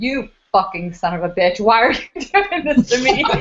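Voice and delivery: put-on enraged cursing tirade, pitch climbing. Recalling cursing at a troublesome haunt figure while neighbors walked by, retelling furious screaming. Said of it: "I'm screaming at him".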